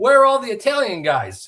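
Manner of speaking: acted-out loud, high-pitched hollering yell. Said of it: "he's fucking yelling at me".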